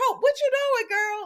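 high-pitched scolding tone, laughing.

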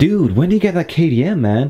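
high, terrible American accent.

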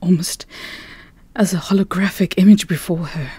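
plain

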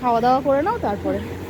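loud call projected across a room.

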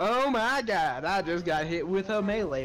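taunting, teasing, needling mocking echo. During a game, repeating another player's words back at them, mocking imitation. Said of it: "I'm just mocking you".

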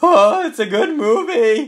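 put-on squeaky, high-pitched teenage voice. Mimicking a classmate who presented on Pulp Fiction, squeaky teen voice. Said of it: "a squeaky voice teen".

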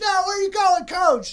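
mock high, loud, pleading shout.

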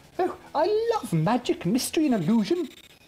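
very high, loud, ringing exclamation. As a lorry arrives on the drive, one onlooker speaks up, exclaiming. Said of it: "exclaimed Bunty".

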